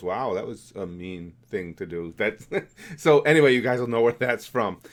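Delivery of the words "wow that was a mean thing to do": put-on deadpan understatement, lower, quieter, slower. Acting out someone's reply in a joke about understatement, mock-understated reaction. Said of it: "being way understated".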